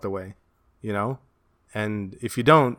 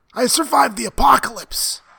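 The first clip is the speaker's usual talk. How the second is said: very high, loud, raspy and breathy voice; 13 semitones higher, 6 dB louder than usual. Mocking a man just described as raspy and breathy, the speaker does a raspy, breathy impression. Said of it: "really like raspy and like breathy".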